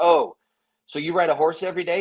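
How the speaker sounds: mock sarcastic tone. Speaker retells what they said to a cowboy, retelling a sarcastic question. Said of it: "And I said to him sarcastically".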